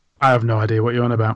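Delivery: ordinary talk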